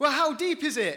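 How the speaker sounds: high, loud shouting.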